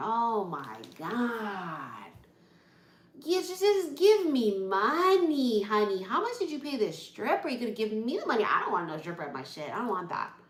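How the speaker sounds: fed-up, irritated, swooping mad rant, God drawn out. Acting out a reply to a party stripper: acting out being mad. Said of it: "I'd be so mad".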